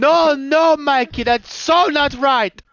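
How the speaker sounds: put-on Italian accent. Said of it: "Is he Italian?".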